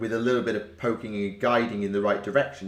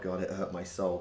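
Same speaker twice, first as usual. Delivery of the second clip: ordinary talk, nothing marked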